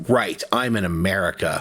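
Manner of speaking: outright, declaring delivery. Retelling what was said after getting pennies back as change: retelling a loud remark. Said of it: "And then I loudly said".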